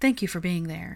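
ordinary delivery

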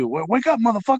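very high-pitched, pushed-up famous movie star voice. Imitating an alarm voiced by Samuel L. Jackson: Samuel L. Jackson impression. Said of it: "you get Samuel L. Jackson's voice for Alexa".

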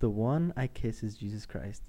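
ordinary talk, nothing marked

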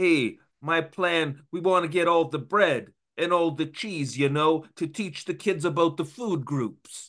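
put-on kids' puppet tough-guy gangster voice. Describing how an actor plays a gangster role; Sesame Street puppet gangster voice. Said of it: "like a Sesame Street puppet gangster character".

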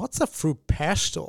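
put-on whispered, breathy, very drawn-out American accent. Imagining an american tourist walking in, in an american tourist accent. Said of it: "Maybe I shouldn't have done that accent".

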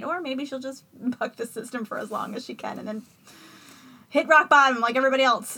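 loud delivery, talking through laughter. Talking about someone who may need to hit rock bottom, laughing while talking. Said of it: "I don't know why I'm laughing about this".

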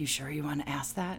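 very quiet, soft half-whisper under the breath. Speaker recounts a boston winner answering her onstage question, retelling a half-whisper. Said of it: "she literally whispered to me".

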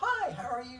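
upbeat, high happy voice. Contrasting a gloomy character with Winnie the Pooh: happy Winnie the Pooh voice. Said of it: "just upbeat and ready to go".

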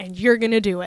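ordinary delivery

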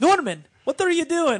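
yelled high, loud and clumsy. Acting out a wrestling bit where Santino calls out Norman Smiley: bad Santino impression. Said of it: "That was the worst Santino ever".

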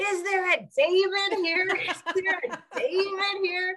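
put-on very high, long, drawn-out calling yell. Retelling how a husband got out of the car: imitating husband yelling. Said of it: "started yelling".

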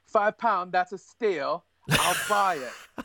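bad fake English accent. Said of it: "That's my awful, awful English accent right there".

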